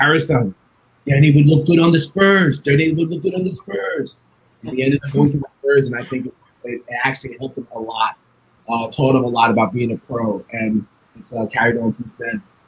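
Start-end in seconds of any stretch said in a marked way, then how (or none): 0.0-4.2 put-on speaking in a Jamaican accent. Speaker recalls what David always said at Danny's games, David's Jamaican accent. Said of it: "in his Jamaican accent".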